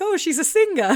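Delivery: high, loud, mocking put-on voice.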